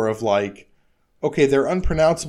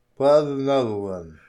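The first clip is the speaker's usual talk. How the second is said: speaking with tongue held between fingers. Following another speaker's instructions, speaking with tongue held between fingers. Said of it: "hold the tip of your tongue between your thumb and forefinger".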